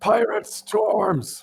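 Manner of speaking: acted bellowing shout. Describing how he looked at the field and the captain, then imitating a bellow. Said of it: "and he bellows".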